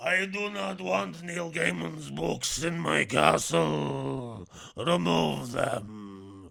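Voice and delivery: very loud, very slow, rasping, creaky, drawn-out rumble. Showing the practiced Count Orlok voice: Count Orlok voice. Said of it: "I was practicing".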